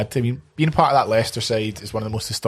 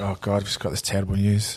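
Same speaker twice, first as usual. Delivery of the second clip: mock dismay, put-on despair. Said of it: "Just like".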